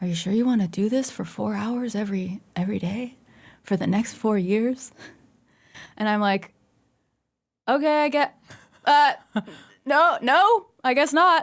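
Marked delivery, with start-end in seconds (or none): 0.0-4.9 whispered speech. Retelling the dad whispering a question to the speaker, imitating a whisper. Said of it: "he whispers".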